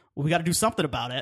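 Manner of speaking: put-on smug tone. Criticizing a movie, acting out how it poses the question, mock-smug. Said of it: "it kind of smugly goes".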